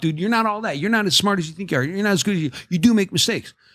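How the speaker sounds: stern scolding tone.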